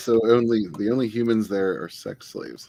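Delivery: ordinary delivery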